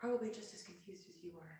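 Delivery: put-on hushed whisper. Leaning over to Zaris in character to confide: whispering in character.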